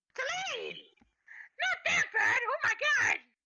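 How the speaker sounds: very high, loud, panicked shout.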